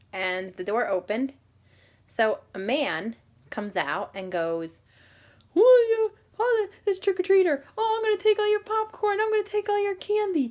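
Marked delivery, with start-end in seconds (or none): 5.5-10.5 very high, loud, odd-sounding teasing voice. Retelling a stranger teasing a trick-or-treater: imitating a man's funny accent. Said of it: "he was talking funny".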